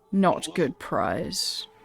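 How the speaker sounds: deep, echoing, resonant, reverberating creature voice. Narrating a game, a creature with glowing eyes stares at the coin, deep reverberating voice. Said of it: "reverberates with this distinct deep voice".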